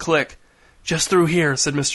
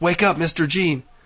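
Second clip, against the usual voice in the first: thin, whispered voice. Reading a story aloud, a voice waking someone in the dark: thin whisper. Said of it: "said a voice in a thin whisper".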